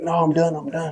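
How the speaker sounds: high-pitched yelling. Retelling a fight, quoting the shoplifter: imitating a shoplifter yelling.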